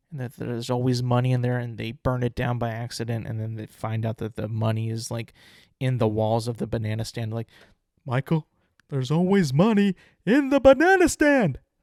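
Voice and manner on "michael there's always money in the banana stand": theatrical high delivery, pitch swooping up and around. Showing an old podcast impression about the banana stand: George Senior impression. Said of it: "this is an impression of his, his voice".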